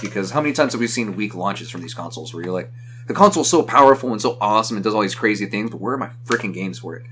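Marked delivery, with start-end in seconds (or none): none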